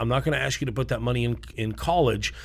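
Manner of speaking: usual speaking voice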